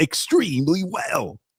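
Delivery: small radio-announcer voice. Repeating how the other speaker just said a phrase: imitating a little radio voice. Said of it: "the little radio voice I do sometimes".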